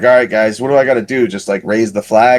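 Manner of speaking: plain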